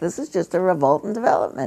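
very calm, fast-spoken, resigned tone.

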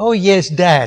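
put-on condescending voice. Retelling a daughter's reply about teaching a retreat: imitating a condescending daughter. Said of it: "with that condescending way that some daughters have".

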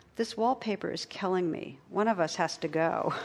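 plain

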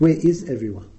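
normal talking voice

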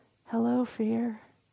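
little tiny voice. Retelling a story, voicing the kid answering from outside in the dark, little tiny voice. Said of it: "this little tiny voice".

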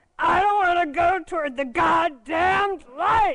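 loud, high-pitched, monstrous bursting cry. Retelling what a paralyzed man about to die cried out in hospital, monstrous sound. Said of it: "it's just this monstrous sound".

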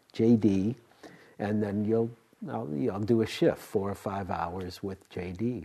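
ordinary talk

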